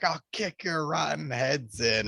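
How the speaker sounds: high, intense, full freakout. Quoting a favorite movie moment: imitating Gene Wilder freaking out. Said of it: "he freaks and he's like".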